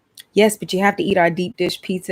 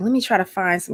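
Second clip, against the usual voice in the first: ordinary talk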